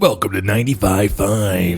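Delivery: put-on radio DJ announcer voice. Introducing the podcast, trying it like a radio announcer: radio announcer voice. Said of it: "I'm gonna try to do it like, uh, you know, those radio announcers".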